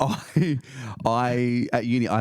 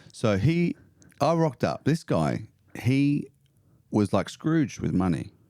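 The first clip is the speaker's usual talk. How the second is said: ordinary talk, nothing marked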